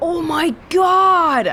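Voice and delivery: high-pitched, shocked outburst.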